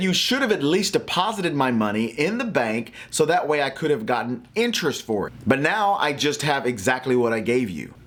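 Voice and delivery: ordinary talk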